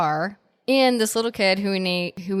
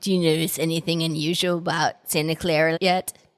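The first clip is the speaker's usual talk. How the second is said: raspy, rough voice like a heavy smoker; 2 semitones lower than usual. Recapping the story, acting out what the brothers say to Sam in a Corey Feldman smoker's voice. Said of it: "smoker's voice".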